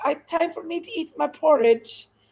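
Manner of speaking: clumsy, unconvincing, bad put-on English accent. Recalling phone calls with a friend who ate porridge, imitating Kirby, bad English accent. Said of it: "I don't do a very good England accent".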